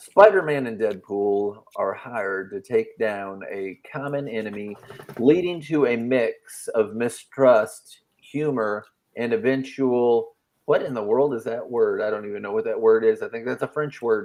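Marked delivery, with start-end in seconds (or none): 0.0-10.3 slow, deliberate storyteller reading voice. Reading a comic series summary aloud on the show, in narration voice. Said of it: "let me be in my narration voice".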